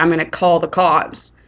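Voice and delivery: ordinary delivery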